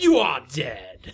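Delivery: loud, maniacal, gleeful, gloating villain voice. Acting out a game's final boss killing the player, Bowser gloating maniacally. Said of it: "gloated so maniacally and happily".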